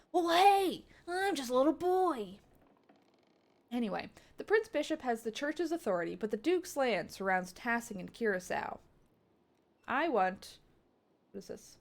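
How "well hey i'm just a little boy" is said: put-on high little boy cartoon voice. Describing a favorite kind of kid voice, in a Pokemon kid voice. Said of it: "but that sort of like".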